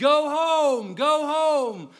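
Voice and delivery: put-on very high, very loud top-of-lungs shout. Retelling how a dad yelled for little Samuel to go home, retelling a dad's yell. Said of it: "yelling at the top of his voice".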